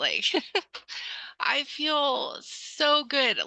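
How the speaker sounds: high, tearful voice, on the verge of tears. Answering a question about how their courage makes them feel, tearing up. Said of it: "I'm gonna tear up thinking about it".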